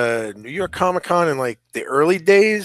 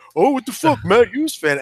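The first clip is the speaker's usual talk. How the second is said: put-on Long Island accent; 9 semitones higher than usual. Retelling a guy's reaction to your saying you're a Matt Hughes fan, imitating his beefed-up, stiff Long Island accent. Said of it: "the guy gets like all beefed up about it".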